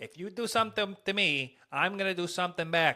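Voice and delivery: fake tough New York gangster accent. Comparing Chicago and New York accents, doing a New York mobster accent. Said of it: "what was that?".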